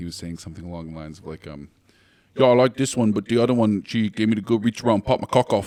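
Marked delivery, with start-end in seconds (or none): 2.4-5.7 put-on loud, heavy British accent laid on thick. Quoting what a guy said to them, in a thick British accent. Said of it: "spoke with the most thick British accent".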